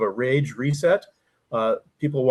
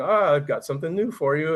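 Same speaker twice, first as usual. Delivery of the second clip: acted-out teasing in a playful tone; 2 semitones higher, 3 dB quieter than usual. Recalling how he teased him about having something new, imitating his own teasing. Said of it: "I'd kind of tease him by going".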